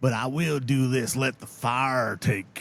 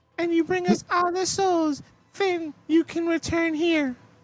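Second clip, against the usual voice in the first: very high-pitched, squeaky woman's voice. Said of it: "using a squeaky voice on him".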